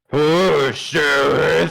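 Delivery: put-on demon voice. Redoing the voice the group heard a demon use: put-on demon voice. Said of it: "I'll do the voice that that we heard the demon use".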